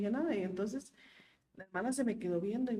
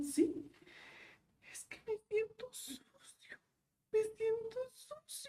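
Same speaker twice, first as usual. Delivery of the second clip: very high, sobbing, tearful pleading words; 14 semitones higher, 4 dB quieter than usual. Retelling own past words to a partner: imitating own crying. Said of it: "pero llorando".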